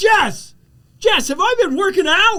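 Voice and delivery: high, loud amazed yell, projected far. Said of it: "And I yelled".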